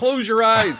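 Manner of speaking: very high, shrill, loud screaming. Retelling a movie scene where he's screaming at Marion: imitating someone screaming. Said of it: "he's screaming at Marion".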